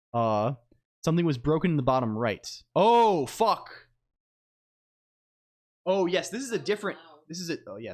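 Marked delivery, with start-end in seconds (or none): 2.7-6.3 thrilled, excited scream, pitched up. Speaker spots the case while explaining a drawing problem, screaming. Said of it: "sorry, I'm screaming".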